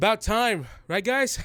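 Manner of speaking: play-acted shrill, high, loud yell. Retelling how Saga called out to everyone: imitating someone yelling. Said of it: "just yells out to everyone".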